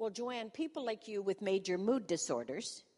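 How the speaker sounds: ordinary talk, nothing marked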